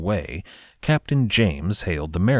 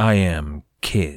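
fearsome, menacing, terrifying pirate-captain voice. Narrating a pirate captain naming himself to a captured captain: terrifying voice. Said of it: "with all the terror in his voice that he could muster".

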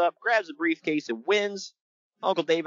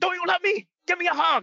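mock shrill, furious shouting, very high; 13 semitones higher than usual. Retelling a ladder match, quote the man who comes down all angry, imitating someone angrily shouting. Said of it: "he's like shouting at him".

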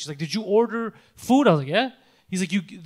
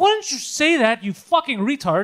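put-on yelling, higher; 6 semitones higher, 4 dB louder than usual. Retelling yelling at a delivery driver on the phone: imitating yelling. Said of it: "you're getting me to yell on the fucking phone".

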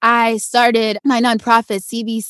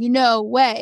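put-on bawling and sobbing, disbelieving. Retelling winning a shopping spree, acting out the past self: retelling own bawling. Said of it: "And I am just crying and bawling".

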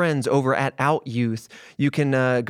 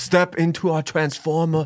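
slow, drawn-out, bad Austrian accent; 3 semitones higher than usual. Joking about going back in time, a bad Arnold Schwarzenegger impression. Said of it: "really, really crappy Arnold Schwarzenegger".

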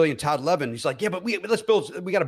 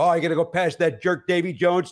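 ordinary talk, nothing marked

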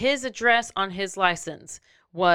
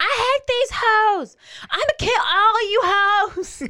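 very high, slow, drawn-out screaming rant; 5 dB louder than usual. Retelling how a man screamed at a woman in his car: imitating someone screaming. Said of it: "he just started screaming at her".

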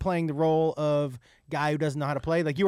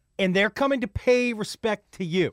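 usual speaking voice

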